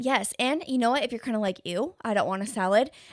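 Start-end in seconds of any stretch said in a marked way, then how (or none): none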